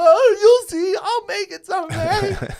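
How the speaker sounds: mock very high, very loud, drawn-out blubbering wail. Acting out leaving a stage after a failed joke: mock crying. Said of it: "flapped behind me and just crying".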